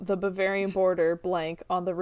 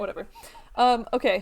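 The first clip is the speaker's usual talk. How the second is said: ordinary talk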